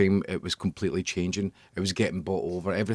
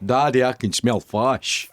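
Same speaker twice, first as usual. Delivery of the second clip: loud northern Scottish accent, fish said as fash; 4 semitones higher, 5 dB louder than usual. Speaker showing how people up north say fish, northern Scottish accent. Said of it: "even up north, they- it's fash".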